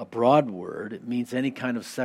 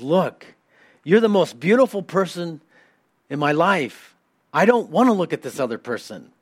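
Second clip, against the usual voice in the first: very loud, raised high, swooping voice; 6 semitones higher, 8 dB louder than usual. Retelling how a man finally answers the woman riding him, raised voice. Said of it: "he raises his voice and says".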